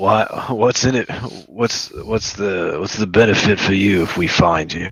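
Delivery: ordinary delivery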